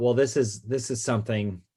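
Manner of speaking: usual speaking voice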